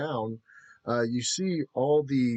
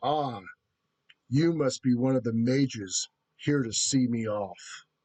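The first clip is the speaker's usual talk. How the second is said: powerful, mighty giant beast voice. Voicing a Godzilla-sized beast greeting a visitor: powerful giant beast voice. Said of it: "his voice is so powerful".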